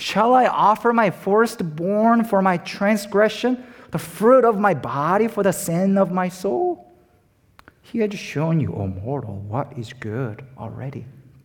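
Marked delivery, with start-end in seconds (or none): 0.0-6.9 play-acted high, dry, sarcastic little voice. Speaker explaining a passage voices Micah's questions, imitating Micah, sarcastic. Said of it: "a little sarcastic voice of Micah".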